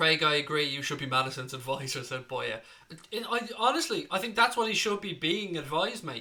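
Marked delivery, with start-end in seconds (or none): none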